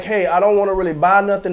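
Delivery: ordinary delivery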